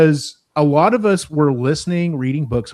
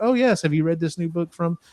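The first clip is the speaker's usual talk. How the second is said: soft, lofty, highbrow intellectual voice; 3 semitones higher, 5 dB quieter than usual. Imitating intellectual people asking about a new book: imitating an intellectual person. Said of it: "especially if you think they're maybe a little more intellectual".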